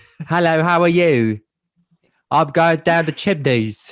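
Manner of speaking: loud, high-pitched South London accent. Putting on a voice for a laugh: Michael Caine voice. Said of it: "Michael Caine".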